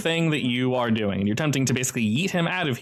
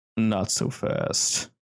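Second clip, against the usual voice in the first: deep, rough, low gravelly voice; 3 semitones lower than usual. A voice of unclear origin stops someone mid-attempt, in a low, gravelly voice. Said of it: "a low, gravelly voice that just says".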